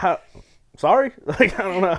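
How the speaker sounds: high, loud, baffled and confused squeak.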